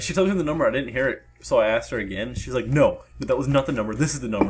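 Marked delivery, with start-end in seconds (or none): none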